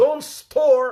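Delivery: urgent pleading, slow, loud and high.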